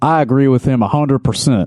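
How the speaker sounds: put-on, homespun, folksy small-town country lawyer voice. Voicing a retired lawyer's line in a put-on country lawyer voice. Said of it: "I could do sort of like a country lawyer type of thing".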